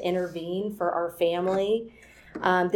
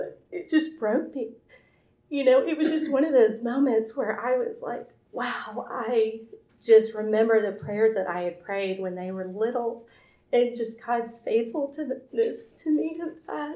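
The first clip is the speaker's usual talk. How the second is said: tearful voice, higher; 4 semitones higher than usual. Telling a story about a kind comment: crying while talking. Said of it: "and I'm crying now".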